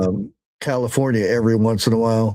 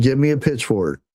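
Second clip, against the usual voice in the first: ordinary talk, nothing marked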